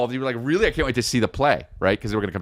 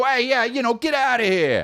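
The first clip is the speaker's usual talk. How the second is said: very high, angry fifties-film style outburst; 11 semitones higher than usual. Mocking how angry characters talk in 1950s movies: imitating an angry 1950s movie line. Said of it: "when people got mad, they go".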